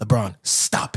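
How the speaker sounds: breathy, whispered on the breath. Quoting how Stephen A said it to LeBron: imitating Stephen A. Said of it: "Stephen A said it like this".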